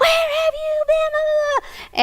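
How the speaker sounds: put-on very high, loud, enraged scream. Retelling how a woman screamed when he walked in the door, retelling her screaming. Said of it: "she starts screaming".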